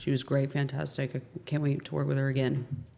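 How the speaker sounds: flat, dead-level, inflectionless monotone. Recalling reading a glowing review aloud, flat monotone. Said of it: "I read it in like this monotone".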